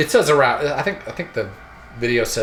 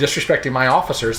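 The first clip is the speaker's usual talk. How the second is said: usual speaking voice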